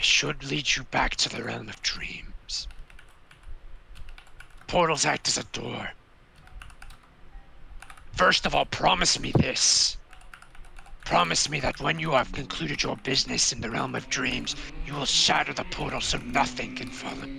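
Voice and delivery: gravelly put-on creature voice. Voicing the Sphinx giving instructions about the portal, gravelly Sphinx voice. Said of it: "you've been doing the gravelly Sphinx".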